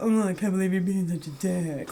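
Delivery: put-on snooty voice. Imitating an actor's voice from an eighties movie: weird snooty James Spader voice. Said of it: "that weird, snooty".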